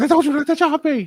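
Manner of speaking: pretend full-volume scream. Imagining being chopped at a wrestling gym: imitating screaming at the top of lungs. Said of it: "Be screaming at the top of my lungs".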